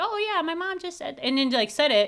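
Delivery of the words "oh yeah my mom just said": high, breezy, mock nonchalant tone. Mimicking how her child repeated her word at a restaurant; imitating her nonchalant tone. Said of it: "a very like nonchalant".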